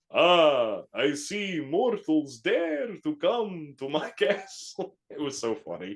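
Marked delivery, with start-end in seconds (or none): 0.1-4.9 put-on very slow, thick Romanian accent, swooping pitch. Retelling how an animatronic Dracula greeted visitors: Dracula voice with thick Romanian accent. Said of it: "animatronic Dracula would come out and be like".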